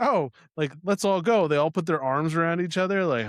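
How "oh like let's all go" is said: derisive, mocking send-up voice. Mocking how the movie characters all walk together: imitating the movie characters. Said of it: "they're like".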